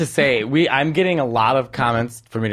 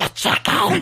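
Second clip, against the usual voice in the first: put-on devil-like voice, pitched higher. Imitating how Rachael Ray opens her show: Rachael Ray voice like the devil. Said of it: "she sounds like the devil".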